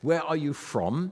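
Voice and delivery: put-on heavy Rhineland German accent. Retelling what a man asked him, in a heavy Rhineland German accent. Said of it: "he said in heavily accented Rhineland German".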